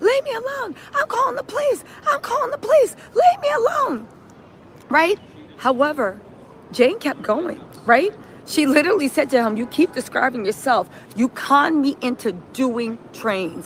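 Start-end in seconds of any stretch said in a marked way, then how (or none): 0.0-4.1 play-acted frantic shriek, very high-pitched. Recounting how a man reacted to a friendly greeting, retelling a scream. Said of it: "he starts screaming".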